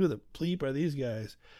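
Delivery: put-on hushed, under-the-breath New York accent. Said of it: "total, you know, New York accents".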